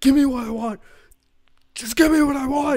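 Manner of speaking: shrill, very high, very loud, all-out screaming. Speaker acts out how he could have delivered the line: retold screaming. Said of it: "like just screaming".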